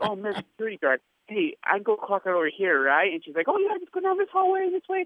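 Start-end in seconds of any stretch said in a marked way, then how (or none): 0.0-3.1 put-on clueless, feigned-lost, playing-dumb tone. Retelling approaching a security guard, retelling pretending to be lost. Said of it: "So I pretend like I'm lost".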